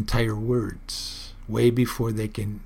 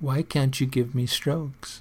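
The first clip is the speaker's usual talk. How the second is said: put-on pleading cat voice, higher pitch; 2 semitones higher than usual. Retelling how a meowing cat seemed to ask for strokes, mock-pleading as Kybo. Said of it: "Her voice had a pleading tone in it".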